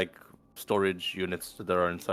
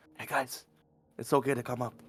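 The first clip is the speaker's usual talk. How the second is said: hushed, soft stage half-whisper; 4 semitones higher, 5 dB quieter than usual. A player's character calls down the stairs to the others, half-whisper. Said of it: "I'll whisper down like".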